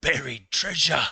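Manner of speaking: eager, thrilled outburst, high-pitched and loud. Voicing a dwarf character as a friend arrives at the table: excitedly. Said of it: "Hori will rather excitedly say".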